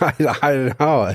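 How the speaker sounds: talking through laughter. Answering another speaker who says a sad story isn't funny: laughing while talking. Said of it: "I'm laughing because it's not funny".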